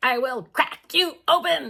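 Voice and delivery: strange changed voice, high, slow and twitching. Recounting a woman's threat, imitating her twitching, strange voice. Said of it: "in a way that was kind of like twitching and like; her voice changed".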